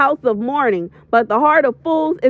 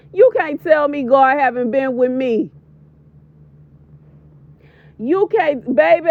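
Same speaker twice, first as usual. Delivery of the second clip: fighting back tears. Recording a voiceover for an emotional video, holding back tears. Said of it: "I'm trying not to cry".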